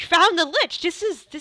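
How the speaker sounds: high, loud, very enthusiastic voice. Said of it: "he looks very enthusiastic".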